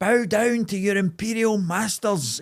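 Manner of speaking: mock high, slow, drawn-out street-crier shout. Retelling a man on a bike with a PA system: imitating a man shouting. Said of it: "he was shouting".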